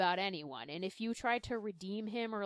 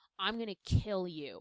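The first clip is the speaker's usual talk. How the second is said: put-on dead serious, deadly grave tone. Retelling a comic fight where the character stands up: imitating a dead serious threat. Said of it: "He's dead serious".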